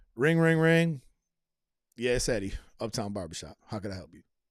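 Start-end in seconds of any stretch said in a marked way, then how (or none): 2.0-4.2 grudging, annoyed, put-out, unwelcoming tone. Mimicking how some places answer the phone: mock-annoyed phone greeting. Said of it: "It sounds like somebody who's annoyed that I even made a phone call".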